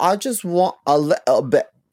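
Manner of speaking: put-on British accent, dropping t sounds. Describing how British people skip T sounds, in a British accent. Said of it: "They don't make their T sounds sometimes. they'll be like".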